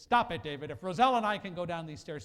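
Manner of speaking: loud, stern snapping in a teacher voice.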